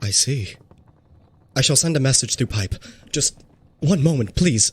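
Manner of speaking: put-on undead priest character voice. Game master voicing the priest replying to the party: priest character voice. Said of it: "and he has one hand on where his heart used to be. / You look at the priest".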